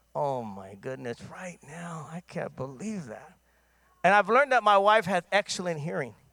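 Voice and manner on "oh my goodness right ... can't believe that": very quiet, low, hushed muttering under breath. Busy working remote when his wife calls, he retells muttering under breath. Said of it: "talking under my breath a little bit".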